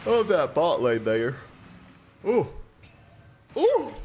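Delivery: words stretched by a loud yawn. A commentator calling the game action, yawning. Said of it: "Sorry, I'm yawning".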